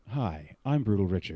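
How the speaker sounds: put-on broadcaster-style radio announcer voice. Retrying a plug for his stream and channel: radio voice. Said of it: "That was my radio voice".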